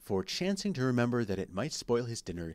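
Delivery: ordinary delivery, nothing marked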